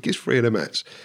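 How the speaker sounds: usual speaking voice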